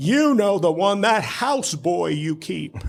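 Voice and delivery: put-on screaming voice. Retelling a phone call where the caller screamed at him: imitating Burwell Putnam screaming. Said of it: "he's screaming at me, top of his lungs".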